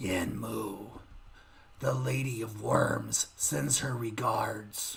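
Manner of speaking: very low, slow, raspy, deathly voice. Game master voices a figure delivering a message to the players, raspy voice of death. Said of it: "he says in this raspy voice of death".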